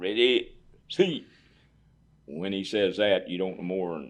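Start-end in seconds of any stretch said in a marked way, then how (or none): 0.0-1.3 loud, high, barked, parade-ground drill-instructor delivery. Retelling the drill instructor's command to sit at the table: imitating a drill instructor's command. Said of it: "gives you the command".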